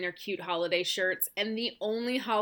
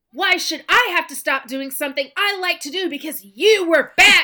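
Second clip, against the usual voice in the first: put-on childish shouting, very high pitch and very loud; 9 semitones higher, 14 dB louder than usual. Parent at the piano retells snapping back at their six-year-old: retelling own yell at child. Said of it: "yelling at my six-year-old".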